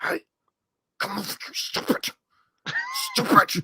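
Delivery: very high, slow whisper-shout through clenched teeth. Demonstrating scolding a wife or girlfriend; whisper-yell through clenched teeth. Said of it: "whisper yell at your wife or girlfriend through like clenched teeth".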